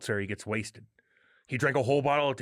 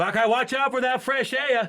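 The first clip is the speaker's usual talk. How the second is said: put-on mocking Boston accent, higher-pitched and louder; 12 semitones higher, 6 dB louder than usual. Retelling how Bean Shooter chirps masked protesters: imitating Bean Shooter chirping people. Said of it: "he'll be like".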